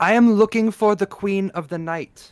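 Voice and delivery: very loud, high calling voice. A player voices their character walking into a brothel, saying it very loudly. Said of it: "she is going to say very loudly".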